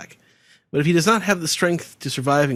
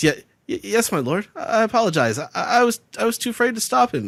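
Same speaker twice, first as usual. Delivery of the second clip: mock obsequious, groveling, stumbling, pitched-up stammer; 7 semitones higher than usual. Retelling Orochi's apology when questioned by his lord: obsequious Orochi voice. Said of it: "grins with his eyes closed very sort of obsequiously".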